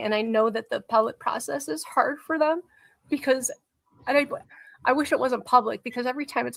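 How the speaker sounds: close to tears, on the verge of crying. Speaker discussing a public appeals process, apologizing for crying: on the verge of crying. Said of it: "I'm going to cry again".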